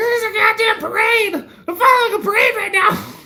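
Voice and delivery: very high, loud, laughing through the words. Retelling a phone call to Heidi, the speaker acts out her past self: retelling laughing while talking. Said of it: "I was laughing".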